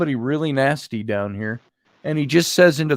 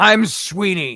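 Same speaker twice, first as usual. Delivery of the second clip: man's angry growl, pitched up; 6 semitones higher, 3 dB louder than usual. Retelling a story, the speaker mimics the voice that answered a woman: imitating Sweeney's angry growl. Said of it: "it was a man growling in anger".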